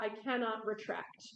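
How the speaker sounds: ordinary delivery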